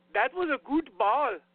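put-on German accent. Joking a club name sounds like a German guy talking, German accent. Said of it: "some Nefta German guy saying".

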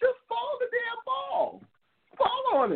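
play-acted very high, slow, drawn-out screaming. Retelling yelling at the TV during a game: imitating own screaming at the TV. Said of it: "I was screaming at the T V".

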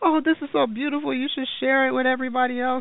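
tearful, squeaky, very high, gushing voice. Retelling what she said while reading your stuff and crying; imitating someone crying. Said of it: "she's crying".

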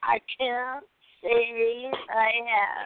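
very slow, loud, groggy half-asleep drawl. Imitating another speaker's answer: imitating Max half asleep. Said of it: "Max is like".

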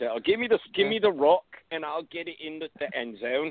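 put-on high-pitched London accent. Imagining how a football player born in London talks: Jay Ajayi in a London accent. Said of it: "I bet he talks like that".

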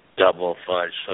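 very low, flat, droning robotic monotone. Retelling the custard shop employee answering your son, in a flat robotic monotone. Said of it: "it sounded like a robot".

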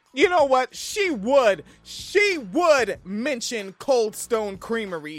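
loud, full-throated yell. Ranting in conversation with another person, yelling. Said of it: "I know I'm yelling".

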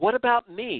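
very high shout through tears. Narrating Tara protesting to her mother, shouted. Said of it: "Tara shouted".

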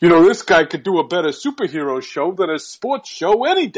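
put-on New York accent, male voice. Retelling what a man said with his arm around him, New York accent. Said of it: "he's got a New York accent".

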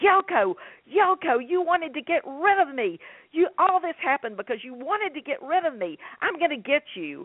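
screaming, high-pitched, pitched way up. Narrator retells a man lost in a nightmare, screaming at Yoko: retelling a scream. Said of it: "and he's screaming".

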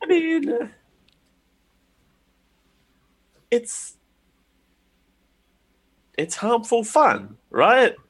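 tremor in the voice. A woman replying after learning what the racket was about, with a tremor in her voice. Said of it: "She says with a tremor in her voice".

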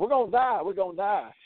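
put-on high holler. Recounting people rocking their car, the speaker quotes Tony: retelling Tony hollering. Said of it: "And Tony's hollering".

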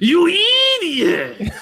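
very high, loud screech, stretching out "idiot". Asked for an impression from the show, the speaker answers with a Ren impression. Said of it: "Can you give us an impression of either of them?".

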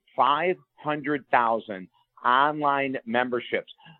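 said very slowly and deliberately.

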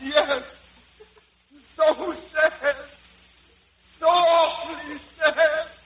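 badly acted put-on crying, clumsy fake sobbing. Locked in the closet, the devil answers whether he is sad, bad fake crying. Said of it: "devil, are you sad?".

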